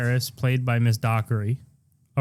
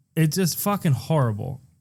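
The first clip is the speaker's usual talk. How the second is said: ordinary talk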